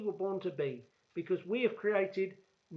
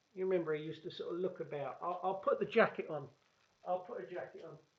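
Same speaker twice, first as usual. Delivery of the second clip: usual speaking voice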